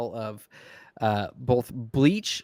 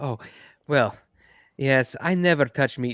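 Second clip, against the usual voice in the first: snide, snarky, sarcastic-sounding delivery; 4 dB louder than usual. Voicing a character bragging about her diet: snarky tone. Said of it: "a snarky tone about it".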